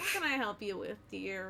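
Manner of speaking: put-on dull, boring, raspy old lady voice. Voicing an old dwarven lady at a front desk: raspy, boring old lady voice. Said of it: "she's very raspy and kind of boring".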